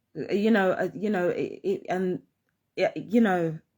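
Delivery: stuttering, stammering with repeated words. Mid-monologue, a speaker stumbles over words, stuttering. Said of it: "sorry, I'll keep stuttering".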